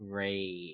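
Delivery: put-on exhausted, very low, quiet, weary deadpan mutter. Mimicking tired investigators reacting flatly to a clue: imitating an exhausted reply. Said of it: "they're all just kinda like".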